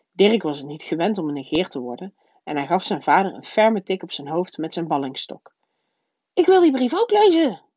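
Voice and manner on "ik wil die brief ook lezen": said loudly, pitched very high. A boy who is not used to being ignored speaks up, loud. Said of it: "zei hij luid".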